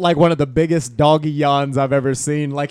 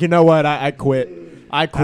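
ordinary delivery

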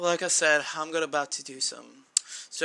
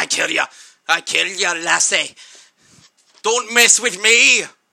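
very loud, full-on Scottish accent; 3 semitones higher, 13 dB louder than usual. During an online match his team goes on to lose, in a full Scottish accent. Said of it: "I went full Scottish".

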